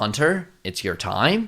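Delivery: fake, bad, put-on American accent. Retelling a school scene, the teacher calls on a student: bad American accent. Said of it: "Bad American accent".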